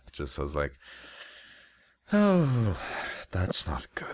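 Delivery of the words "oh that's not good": uneasy, anxious muttering, slightly high-pitched. Narrating a scene, voicing a character reacting to what he hears: muttered under his breath. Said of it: "Just kind of under his breath".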